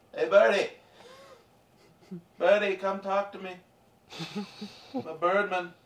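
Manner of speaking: put-on tipsy, half-drunk voice, calling out. A player's character yells at a bird to talk with it, half-drunken yelling. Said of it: "I'll just yell at him. Half drunkenly".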